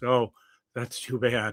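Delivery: flat little monotone, level with no lift. Discussing a favorite film sequence, the speaker quotes Seth's line in a Jeff Goldblum monotone voice. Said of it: "that little monotone vo- voice where he just".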